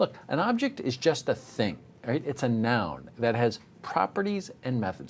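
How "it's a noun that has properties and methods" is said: ordinary talk, nothing marked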